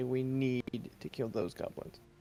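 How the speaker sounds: very serious, grave and earnest. Speaking in character to the party about the goblins: very serious. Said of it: "with a very serious face and say".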